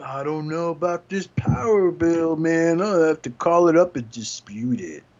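put-on stoner voice. Imitating a toy character checking mail and paying bills, stoner-voice Blurr impression. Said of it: "he just sounds like a stoner".

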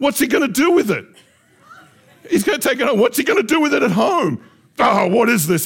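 high, loud, really mad angry outburst.

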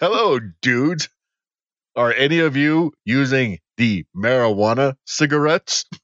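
put-on uncool middle-aged man trying to sound cool. Mocking how a 40-year-old guy trying to be cool sounds; mock 40-year-old trying to be cool. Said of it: "a 40-year-old guy trying to be cool".

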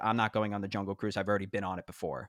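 ordinary delivery

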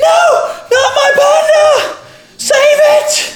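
very high, muffled shriek of pain. Narrating the scene, the speaker voices Twinelda in the audience: a muffled scream of pain. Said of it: "a muffled shout of pain and fear as Twinelda screams".

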